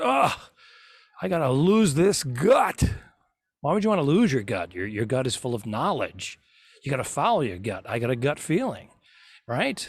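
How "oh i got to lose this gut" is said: put-on high, very drawn-out grunting complaint. Telling a joke about the man next to him at the gym, retelling a grunting gym guy. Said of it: "he grunts".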